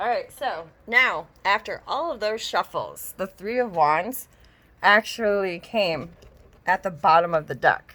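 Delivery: slowing down to slow, deliberate pacing.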